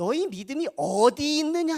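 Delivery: high, loud, reproachful tone.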